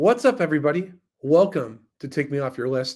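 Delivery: put-on radio-announcer style podcast host voice. Opening a podcast episode, greeting everybody: podcast host voice. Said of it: "I just put on my podcast voice".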